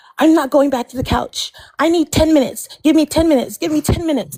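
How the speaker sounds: put-on distressed, overwrought, worked-up complaining. Complaining about a woman who got so upset, imitating her getting upset. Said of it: "And then her getting like so upset".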